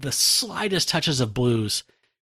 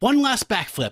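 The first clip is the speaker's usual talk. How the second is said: high, exultant, triumphant shout. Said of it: "just exultantly like".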